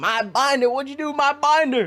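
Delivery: mock, blown-up furious shouting, pitched way up. Retelling blowing up at a classmate: imitating own past angry yelling. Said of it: "I was yelling at it".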